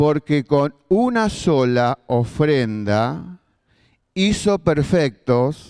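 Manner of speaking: slow, deliberate reading, word by word. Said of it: "y lo leo despacio".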